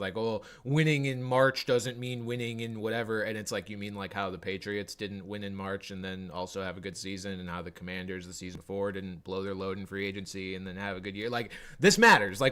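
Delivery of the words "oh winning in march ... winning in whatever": sarcastic, know-it-all tone. Quoting a tweet that was trying to be sarcastic: imitating a sarcastic tweet. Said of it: "trying to be, like, sarcastic".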